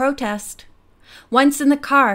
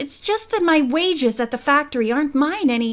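ordinary delivery, nothing marked

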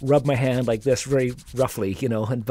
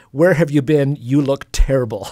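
loud, raised, put-on Chinese accent; 7 dB louder than usual. Retelling what the restaurant's owner said on arrival: imitating her accent. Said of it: "looks at me with her accent and says".

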